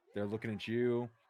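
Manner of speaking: plain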